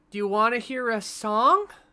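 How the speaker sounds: loud, high yell projected as if across a room. Playing a character calling out to Sarah: yelling across the room. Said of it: "I'm gonna yell across the room".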